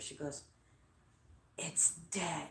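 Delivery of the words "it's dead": hushed, very soft, barely-there whisper. Retelling what she said after coming closer to him, whispering. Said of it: "she whispers".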